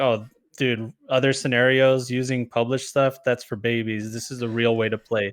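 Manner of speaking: normal talking voice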